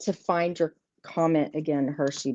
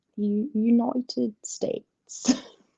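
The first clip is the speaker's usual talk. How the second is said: bad, horrible, fake English accent, pitched up; 6 semitones higher than usual. Speaker listing times in Eastern, saying the country name in a horrible English accent. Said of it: "with a horrible English accent".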